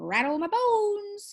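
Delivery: eerie, spooky, very high parrot-like bird voice. Reading a story where a parrot answers Matilda, in a spooky voice. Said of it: "imitation of a spooky voice".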